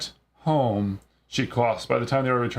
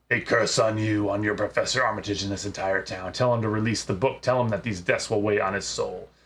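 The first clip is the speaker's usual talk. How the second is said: put-on menacing possessed voice, not a young woman's; 3 semitones lower than usual. Voicing a possessed patient cursing the players: possessed voice, not a young woman's. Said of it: "Her voice is not that of a young woman".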